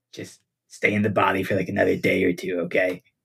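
low, close stage whisper. Leading the captain off for tea, a character speaks into his ear, whispering. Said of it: "And then I whisper in his ear".

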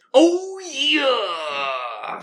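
very high swooping wrestler drawl, yeah stretched out. Closing the segment with a quick Macho Man voice. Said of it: "I'm gonna do a little Macho Man".

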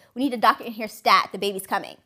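ordinary delivery

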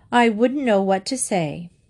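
plain reading voice

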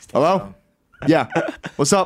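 brisk, businesslike working voice. Imitating their dad in the daytime, in his work voice. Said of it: "Work voice".

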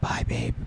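barely-there, very quiet, soft whisper. Retelling saying goodbye to a sleeping partner: imitating a quiet whisper. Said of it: "just whispering really quiet".

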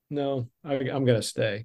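ordinary talk

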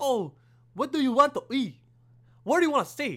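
high-pitched, bad, mock Chinese accent. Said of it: "that's awful Chinese".

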